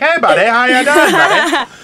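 very high, loud, squeaky cartoon Canadian accent. Imitating how South Park depicts Canadians: South Park Canadian voice. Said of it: "how they depict Canadians".

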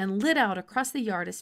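ordinary delivery, nothing marked

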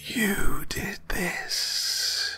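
chilling, ghostly, blood-chilling whispered rasp. A creature advances on the terrified narrator, in a rasping, blood-chilling voice. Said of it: "she rasped in a voice that froze my blood".

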